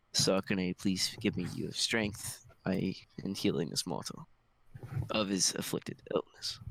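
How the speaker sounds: whispering under breath. Voicing a character who grabs a hand and prays: whispering under breath. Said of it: "basically whisper under my breath".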